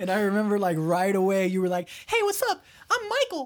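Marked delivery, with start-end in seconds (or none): 2.1-3.5 very high little cartoon-mouse voice. Recalling how the listener first introduced himself, in a Mickey Mouse voice. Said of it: "I don't know why you sounded like Mickey Mouse".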